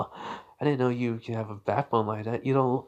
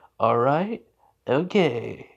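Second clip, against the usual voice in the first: put-on perky teacher voice, louder; 2 semitones higher, 4 dB louder than usual. Retelling a homeroom teacher's greeting to the students: perky enthusiastic Aizawa voice. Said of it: "happy, perky, enthusiastic".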